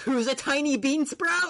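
mock outraged shout, very high and stretched out. Retelling a scene where a character yells at the crowd: Ed yelling in anger. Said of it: "And then Ed fucking yells".

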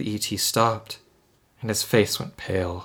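ordinary delivery, nothing marked

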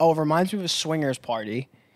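ordinary talk

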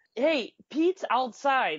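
high yell. Retelling how a buddy answered the phone: imitating someone yelling. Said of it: "He yells".

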